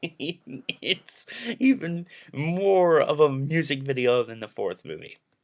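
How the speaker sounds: slow delivery, laughing through the words. Ranking movies for viewers, laughing while talking. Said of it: "I'm sorry I'm laughing".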